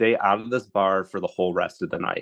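plain

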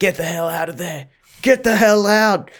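mock security-guard voice, mild half-yell. Speaker retells a security guard confronting a naked swimmer, retelling a guard's yell. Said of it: "the security guard's yelling at him".

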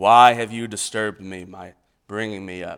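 loud, booming ghost voice. Retelling the story of the medium raising Samuel, speaking as Samuel in a ghost voice. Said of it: "It's my best ghost voice".

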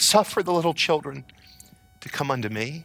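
loving, compassionate, tender, gentle voice. Describing Jesus as young children come to him, imitating Jesus's tender voice. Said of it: "Jesus in his tender voice saying".

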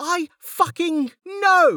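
shrill, very high, furious scream. Narrator reading Lynn screaming back at Tech, angry scream. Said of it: "she screamed back".

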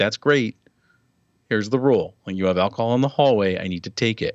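ordinary delivery

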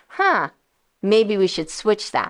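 normal talking voice

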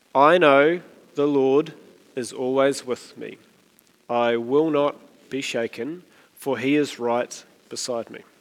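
unhurried reading aloud. Leading a group reading the verse together again, slightly slower reading. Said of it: "but slightly slower".

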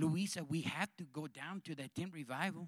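put-on low, soft Colombian accent. Telling a story, Pepe urges Luisa to go to the tent revival. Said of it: "That's why I'm talking like this".

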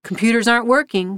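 ordinary talk

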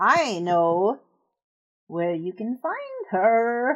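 put-on raspy, scratchy old woman's voice, coaxing tone. An older woman from the shadows speaks to two strangers, scratchy old voice. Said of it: "And then you hear from like in a corner in the shadow, this scratchy old voice like, / This older woman comes out of the shadows, and she is disfigured. You both realize quickly that she has had some".

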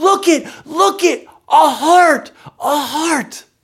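put-on high, loud child's voice in wide-eyed wonder. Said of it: "in wide-eyed wonder".

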